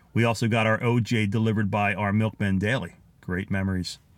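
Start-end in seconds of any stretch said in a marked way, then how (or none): none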